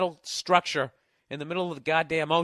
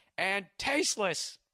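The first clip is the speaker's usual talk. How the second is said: put-on shouting; 3 semitones higher, 5 dB quieter than usual. Reading a woman's all-caps email aloud to listeners, imitating the writer yelling. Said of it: "Now she's going to yell again".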